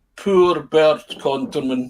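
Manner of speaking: villainous put-on Swedish accent. Recalling a man's remark as the speaker walked away, doing a Bond villain Swedish accent. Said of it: "that kind of Bond villain Swedish".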